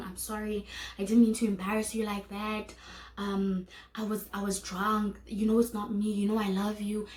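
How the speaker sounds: put-on sobbing, shaky, tearful crying voice. Retelling an apology in the street after a breakup: imitating someone crying. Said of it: "this person is crying, he's shaking".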